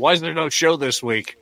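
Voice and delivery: high, loud, angry voice.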